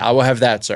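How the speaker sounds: plain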